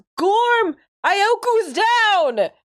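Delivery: very high, acted, in-character yell. Playing Inktail, yelling to Gorm that Ioku is down: character yelling. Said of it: "Inktail yells".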